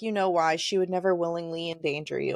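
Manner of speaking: ordinary talk, nothing marked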